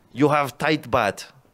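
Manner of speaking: put-on Russian accent. Speaker acts out a made-up character's line, in a put-on Russian accent.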